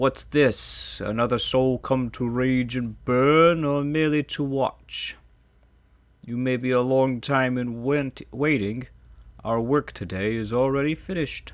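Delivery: many voices as one, slow, loud, crying out. A hundred scourged figures surrounding you cry out in unison. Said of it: "The faint whispers resolve into a cacophony of voices. You imagine yourself surrounded by 100 men and women. / You imagine yourself surrounded by 100 men and women. Their naked flesh is scourged and b".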